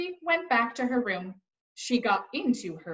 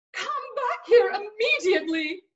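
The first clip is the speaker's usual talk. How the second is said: very high-pitched, shrill shouting; 9 semitones higher, 4 dB louder than usual. Narrating a story, Eugenia calls to her sister Baby: shouted. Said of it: "Shouted Eugenia".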